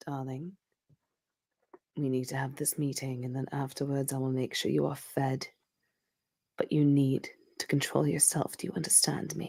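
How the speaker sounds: very soft, very quiet, hushed, close whisper. Voicing a character who pulls her wife close to speak: whispering. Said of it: "she just leans down and whispers to her".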